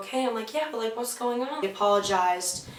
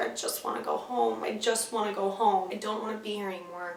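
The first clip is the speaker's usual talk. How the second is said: sobbing, tearful, pleading crying voice; 4 dB quieter than usual. Retelling begging to go home after starting to cry: imitating own past crying. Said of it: "And then I just started crying".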